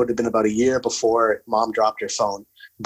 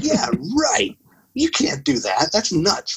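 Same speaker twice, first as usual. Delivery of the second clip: scoffing, mocking, pitched-up laughing, dismissive tone; 8 semitones higher than usual. Recalling hearing people praise the iPhone, reenacting mocking laughter at them. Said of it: "I remember laughing at them".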